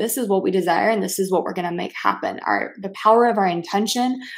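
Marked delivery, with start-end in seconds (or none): none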